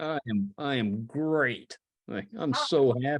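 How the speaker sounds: sarcastic tone. Showing that sarcasm works the same in Spanish: sarcastic demo. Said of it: "It's sarcasm".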